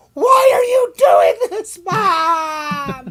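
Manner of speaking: very slow, very loud, drawn-out wailing scream. Retelling a kid at a shot station, imitating a screaming kid. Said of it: "kid was just screaming, like, at the top of his lungs".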